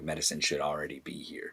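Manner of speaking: quiet mumble. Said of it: "mumbles something about".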